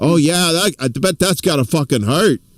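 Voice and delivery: put-on drowsy, relaxed voice with New Jersey accent. Imitating a viewing partner who starts to fall asleep: Indy impression. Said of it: "This is my Indy impression".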